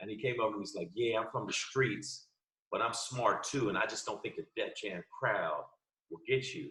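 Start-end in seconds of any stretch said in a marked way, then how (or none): 0.9-6.7 seductive, sexy voice, laid on thick, acted. Retelling what a comic told him about a Def Jam crowd: imitating someone talking all sexy. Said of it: "why you trying to talk to me all sexy?".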